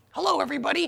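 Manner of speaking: very high ventriloquist dummy voice, lips kept still. On a podcast, boasting of being the better ventriloquist, ventriloquist voice. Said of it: "My mouth didn't move at all".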